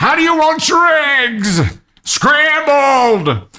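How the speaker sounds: put-on shrill, very high shout. Recounting shouting a breakfast order through a phone, relayed by a coworker, retelling a shouted order. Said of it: "I'm shouting my order through the phone".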